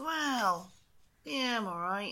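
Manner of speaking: quiet, half-hearted, unconvinced, drawn-out "well". Answering a how-are-you while greeting each other, sounding unconvinced. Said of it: "you don't sound too convinced".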